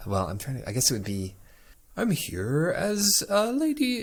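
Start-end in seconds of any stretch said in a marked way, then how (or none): 2.0-4.0 very high, slow, drawn-out elvish lilting voice. In a game, a player voices a local sent to guide the party, higher-pitched half-elf voice. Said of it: "got to be like a higher pitched knock".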